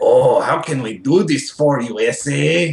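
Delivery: put-on very slow, drawn-out gurgly alien voice, vaguely Mexican accent. Imitating the audiobook narrator's scummy alien voices: imitating a gurgly scummy alien voice. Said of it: "gurgly and vaguely, like, racist Mexican".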